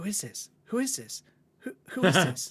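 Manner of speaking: play-acted panicked, frantic, freaked-out, repeating. Retelling a sister's reaction to a surprise visit, imitating someone freaking out. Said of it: "she was totally freaking out".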